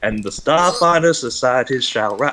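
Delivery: put-on American Southern accent. Showing how they had to deliver a line: southern voice. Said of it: "in a in this southern voice".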